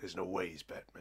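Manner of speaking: growled put-on character voice throughout. Retelling what Harvey said to Bruce in a comic plot: growled Two-Face impression. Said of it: "I quite liked the growl you did there".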